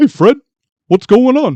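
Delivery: very high, cartoonish voice pitched way up. Testing the claim that two cartoon voices match, doing a Barney Rubble voice. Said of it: "the exact same as Yogi Bear".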